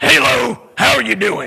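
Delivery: rough, mean put-on voice. Speaker imitates a rough woman behind a counter greeting a man, in an Ursula-like rough voice. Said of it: "she talked like that. She like Ursula".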